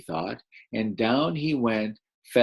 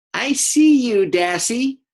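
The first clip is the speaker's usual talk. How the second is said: very high, very slow, drawn-out eagle-like bird call; 12 semitones higher, 5 dB louder than usual. Reading a story aloud, voicing the eagle swooping down at Dassy, eagle voice. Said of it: "I'm going to be the eagle voice".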